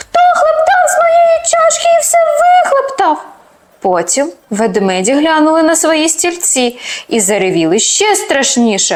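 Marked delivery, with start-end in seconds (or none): 0.0-3.2 thin, very high, squeaky little voice. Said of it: "запищав тоненьким голоском".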